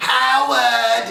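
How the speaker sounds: very high, creaky, drawn-out, accented voice.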